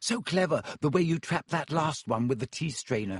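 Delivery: ordinary delivery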